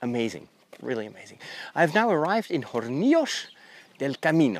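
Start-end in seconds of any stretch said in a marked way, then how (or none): 1.7-4.6 swooping attempt at Madrid Spanish accent. Naming the town just reached on the walk: attempted real spanish accent. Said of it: "trying to do the, the real Spanish accent".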